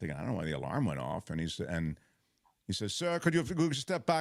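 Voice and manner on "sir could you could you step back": put-on severe German accent, pitched up. Quoting the man at the security gate who stops the speaker, severe German accent. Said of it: "he's got that German accent, which just sounds very severe".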